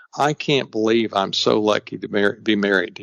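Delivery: whispered. Retelling a morning compliment said in bed to a wife: reenacted whisper. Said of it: "I'll just whisper to her".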